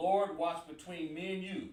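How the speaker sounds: ordinary delivery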